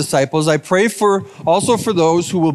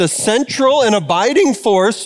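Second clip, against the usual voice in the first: voice breaking and cracking; 4 semitones higher than usual. Speaker mid-talk, voice cracking on a phrase. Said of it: "voice crack".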